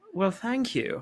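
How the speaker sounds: put-on polite English accent. Retelling a film scene where she answers the steward's compliment: imitating an English accent. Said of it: "in an English".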